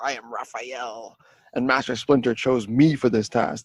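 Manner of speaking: put-on militant voice. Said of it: "He sounds so much more militant".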